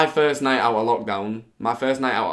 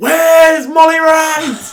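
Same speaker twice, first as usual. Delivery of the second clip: man shouting, higher and louder; 11 dB louder than usual. Retelling a man who came up and kept shouting, imitating a man shouting. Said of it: "he just keeps shouting".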